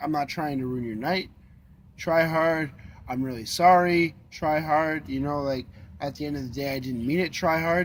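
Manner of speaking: usual speaking voice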